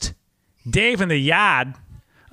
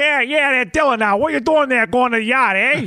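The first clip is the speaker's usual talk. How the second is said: exaggerated, pitched-up Boston accent; 8 semitones higher than usual. Showing how outsiders imagine Boston speech, in an exaggerated Boston accent. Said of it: "they crank it up to like 100, right? So it's like".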